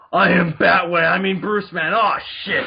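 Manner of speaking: loud, very slow, drawn-out dumb voice. Imitating a spoof of Chris Nolan's Batman: dumb spoof Batman voice. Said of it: "a guy who talks like this and is really dumb".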